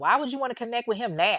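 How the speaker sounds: mock angry, high, demanding tone. Retelling a mother's reply to her son's question, imitating a mad, demanding tone. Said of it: "She gets mad and she's all demanding".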